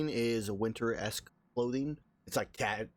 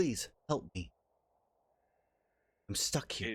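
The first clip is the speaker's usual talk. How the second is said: ghostly voice; 3 dB quieter than usual. Narrating a ghost speaking through her to the group: speaking in Eris's voice. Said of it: "and in Eris's voice goes".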